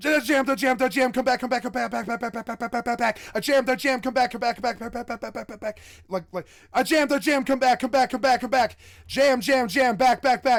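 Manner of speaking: loud, high, frantic, rapid-fire chatter. Showing how an Overwatch player calls to teammates: talking very fast. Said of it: "X Q C talks so fast is because you need to be like".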